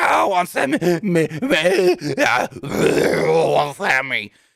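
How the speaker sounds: slow, throat-strained voice. Retelling a backstage segment, imitating Kevin Owens straining his throat. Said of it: "I hurt my throat just trying to do it".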